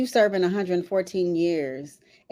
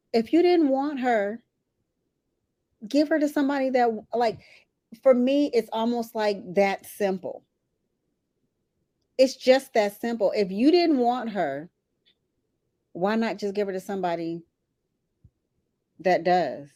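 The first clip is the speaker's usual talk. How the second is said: fighting back tears; 4 semitones higher than usual. Talking about whoever didn't want her, holding back tears. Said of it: "I'm trying not to cry".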